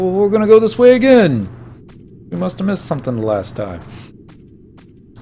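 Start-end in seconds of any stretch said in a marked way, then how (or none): 0.0-3.8 high-pitched, loud mock put-on voice. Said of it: "He doesn't talk like that".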